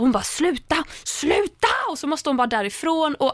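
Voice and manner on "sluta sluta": acted desperate high-pitched shrieking scream. Describing a scene where she breaks down, retelling her screaming. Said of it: "där börjar hon skrika".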